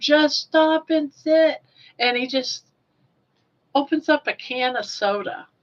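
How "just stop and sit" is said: high-pitched shouting. Retelling what the ex shouted as a moose charged: imitating someone yelling. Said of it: "And he's yelling".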